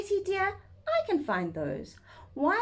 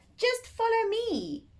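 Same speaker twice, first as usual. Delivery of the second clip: put-on lumpy, croaky old toad voice, pitched up; 7 semitones higher than usual. Reading a children's story aloud, voicing a toad speaking to Harry: croaking old toad voice. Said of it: "croaked a lumpy old toad".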